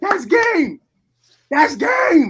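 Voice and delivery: very high, very loud, shrill scream. Retelling a winning moment while rolling on the ground: imitating own screaming. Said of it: "I'm screaming just like that".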